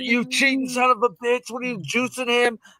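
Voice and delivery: play-acted angry jeering and heckling, yelled. Speaker retells yelling at a man about his horse, retelling a yell. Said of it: "I'm yelling at Baffert".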